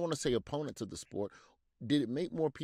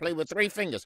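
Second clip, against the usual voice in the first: put-on high, loud, taunting old-man chatter; 5 semitones higher, 5 dB louder than usual. Mocking old-school football players talking to today's players, with mocking chattering. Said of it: "(mocking chattering)".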